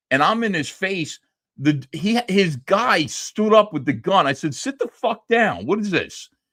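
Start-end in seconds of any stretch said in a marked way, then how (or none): 4.5-6.3 mock barked yell, high-pitched and swooping. Retelling confronting a man who stood up with a gun: retelling a yell. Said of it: "Somebody's filming me yelling at".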